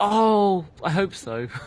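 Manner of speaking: dreamy, high-pitched cooing daydream tone. Reacting to the idea of a balloon for the skull: tone for imagining things. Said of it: "That's the tone of voice people like reserve for imagining".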